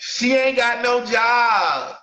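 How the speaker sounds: slow, hard tough-guy talk, job drawn out. Acting out how a guy talking tough sounds, mock-tough talk.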